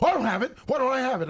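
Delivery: mock exasperated shout. Retelling being yelled at on walking in: imitating someone yelling. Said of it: "you yelled at me twice when I walked in".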